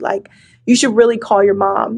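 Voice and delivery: ordinary talk, nothing marked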